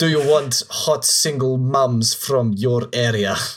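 fake, put-on Russian accent. Mocking an ad's text, the speaker reads it aloud in a russian accent. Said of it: "I always read that stuff in like a Russian accent".

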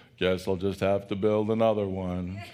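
very low, depressed, glum cartoon voice. Retelling the cartoon character's reaction to his house being gone: mock-depressed Eeyore voice. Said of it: "the most depressed cartoon character in history".

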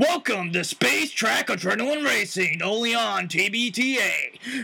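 raspy announcer voice. Voicing an announcer character mixed from other voices, gravelly announcer voice. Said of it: "I mixed them up together for the announcer voice".

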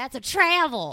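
very loud, high hollered shout. Acting out watching a basketball game and spotting a travel: imitating a shout. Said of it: "so you shout".

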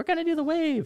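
squeaky, very high little-mouse yell. Retelling getting people to start a wave, yelling in a mousy voice. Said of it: "they will hear a mousy voice yelling".

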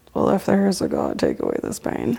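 very under the breath, matter-of-fact mutter. Retelling what they said standing near the button, very under the breath. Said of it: "Like very under my breath".

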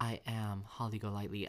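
ordinary talk, nothing marked

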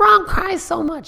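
very high whiny voice. Imitating critics of lebron: imitating people complaining. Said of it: "That's my voice of, you know, like, people bitching".

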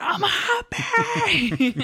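mock, high, loud, slow, gushing giddy delight.

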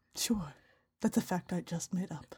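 very quiet, low, sultry put-on British accent. Co-host jokingly owns up to a made-up fact, in a quiet, sultry british accent. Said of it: "I'm going to use this voice for the rest of the show".

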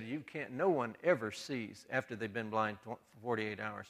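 ordinary talk

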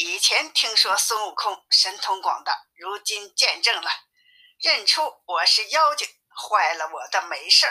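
plain reading voice

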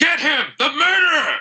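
shrill accusing shout, very high. Voicing a dwarf who points at a player, accusing shout. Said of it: "points a finger at you and says".

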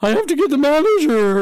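squeaky, very high, loud little voice. Reminiscing about a boy at school with a memorable voice: imitating his squeaky voice. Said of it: "he had that you know that voice".

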